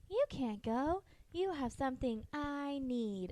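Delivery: creepy, soft, hushed, slow, high-pitched doll voice. Retelling what Gabby Gabby said to the speaker, high-pitched Gabby Gabby voice. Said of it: "freaks me out with her high pitched voice because she's like".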